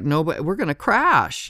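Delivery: mock frightened, high, scared outburst. Retelling her reaction on a boat ride as a big ship approaches, imitating someone scared. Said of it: "she got real scared".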